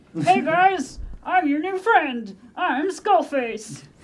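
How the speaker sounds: high, loud ventriloquist dummy voice. Making a picked-up skull talk, ventriloquist voice for a skull. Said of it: "I will ventriloquize".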